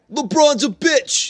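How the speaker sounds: very high-pitched put-on voice. Showing another speaker a Michael Rappaport impression. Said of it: "That's my Michael Rappaport impression".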